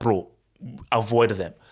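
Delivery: ordinary delivery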